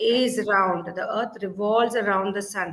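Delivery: ordinary delivery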